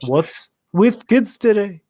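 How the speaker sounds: slow, drawn-out, half-British voice, a little loud. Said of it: "It almost sounds like [name] there".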